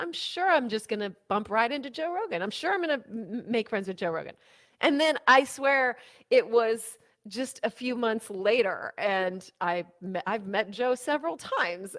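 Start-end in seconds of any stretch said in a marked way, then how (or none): 0.0-4.4 heavily sarcastic, mocking tone. Retelling own reply to people who kept saying a meeting would happen, retelling a sarcastic remark. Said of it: "I said it sarcastically".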